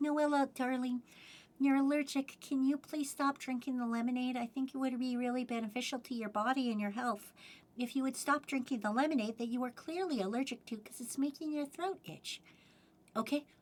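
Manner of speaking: sugary, sweet, soft, gentle little voice. Showing how not to talk to someone allergic, in a sweet little nice voice. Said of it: "with a sweet little nice voice".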